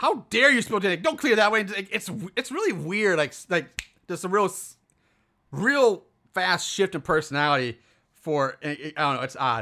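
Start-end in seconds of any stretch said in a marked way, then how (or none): 0.0-1.6 stern, strict motherly scolding voice. Retelling a movie character's sudden shift: imitating a stern motherly tone. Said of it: "stern and mother".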